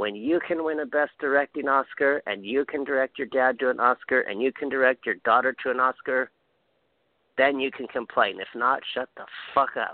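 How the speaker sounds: put-on heavy, thick Mexican accent. Speaker quotes what a friend from Mexico told everyone, imitating Gabby's thick Mexican accent. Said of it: "in this thick, thick Mexican accent says".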